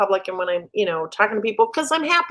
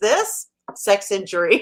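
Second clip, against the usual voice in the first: completely straight, deadpan, no audible reaction. Retelling what Mom said to a friend, retelling Mom's deadpan reply. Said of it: "Mom looks at him and deadpan goes".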